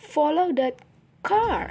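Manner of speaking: car stressed, long, clear, pitch-changed. Showing focus-word stress in a listening lesson: stress on car. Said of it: "listen and notice how the stress syllable of the focus word extra long and clear and has a pitch change".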